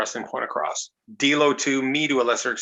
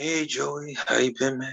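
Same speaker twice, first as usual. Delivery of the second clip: mock, slow, spaced-out stoned drawl; 3 dB quieter than usual. Retelling a phone call, doing Roddy Piper sounding stoned. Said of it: "he always sounded three joints in".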